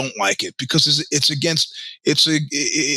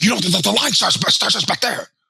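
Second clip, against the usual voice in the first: angry, high-pitched, rushed, stumbling rush of words; 5 semitones higher than usual. Recounting what a stranger in Spain came up and said, imitating an angry man. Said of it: "very angry, and he says".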